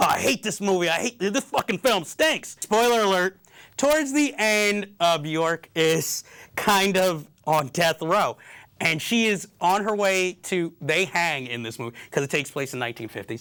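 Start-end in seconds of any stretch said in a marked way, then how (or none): 0.0-2.6 overwrought, upset, very emotional outburst. Retelling a friend's reaction during a sad film: imitating Ellie getting emotional. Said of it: "he's getting very emotional because he's like".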